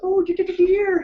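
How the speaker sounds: very high-pitched, fretful voice. Explaining which Winnie the Pooh character they resemble: Piglet voice. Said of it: "how he goes, always goes".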